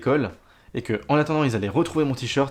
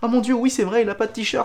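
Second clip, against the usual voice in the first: mock very high, alarmed, panicked woman's cry; 10 semitones higher than usual. Retelling a woman who came running to see the speaker's missing t-shirt, imitating a panicked woman. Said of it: "les gens paniquaient juste".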